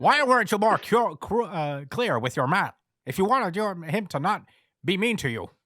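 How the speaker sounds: put-on booming, loud voice with half-British accent. Challenge someone about what they told their man, in an attempted Andrew Tate impression. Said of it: "Andrew Tate is a tough voice to do".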